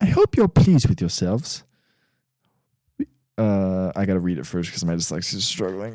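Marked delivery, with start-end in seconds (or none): 0.0-1.6 put-on young schoolgirl voice, higher. Quoting a movie line for a guessing game: impression of Hermione Granger. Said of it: "I'm gonna do my best impression".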